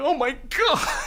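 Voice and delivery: put-on very high, tearful, weepy crying voice. Reading a manga scene where a wife character cries: acted crying voice. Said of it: "she's, like, crying".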